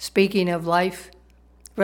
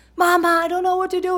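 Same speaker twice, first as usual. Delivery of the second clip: put-on play-acted very high, shrill, loud screaming little boy; 13 semitones higher, 5 dB louder than usual. Telling a joke, the speaker acts out Johnny screaming upstairs to his mother. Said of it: "and he's just yelling".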